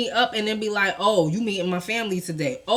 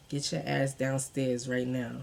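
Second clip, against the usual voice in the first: mock whisper, lower and quieter; 8 semitones lower, 13 dB quieter than usual. Retelling what he said into her ear at a family gathering: imitating a whisper in the ear. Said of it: "he comes in my ear".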